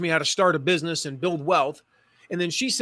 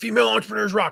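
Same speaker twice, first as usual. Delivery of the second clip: put-on women's voice; 4 semitones higher than usual. Retelling what he told her about her niche: put-on voice for how the ladies say it. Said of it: "'cause that's how the ladies would say it".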